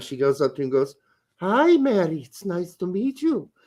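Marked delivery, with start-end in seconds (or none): 1.4-3.4 put-on senile old grandma voice. Retelling a comedy skit, voicing the old senile grandma. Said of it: "the old senile grandma".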